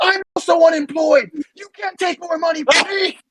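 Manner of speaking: very high, shrieking screaming outburst. Retelling snapping at a woman who demanded the five, retelling own scream. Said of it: "I screamed at the top of my lungs".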